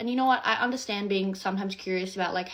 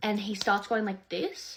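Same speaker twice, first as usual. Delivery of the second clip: normal talking voice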